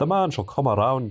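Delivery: weak, bad, put-on Irish accent. Jumping into campaign mode, doing a not very good Irish accent. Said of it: "That's my best impression of uh, Irish".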